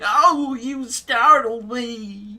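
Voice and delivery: shrill, very high, very loud caricatured nerdy voice. Mocking another speaker's line, imitating their stereotypical nerdy voice. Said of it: "you have the most stereotypical nerdy voice ever. It's like".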